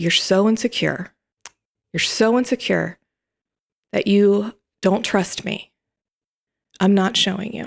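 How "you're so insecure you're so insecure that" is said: usual speaking voice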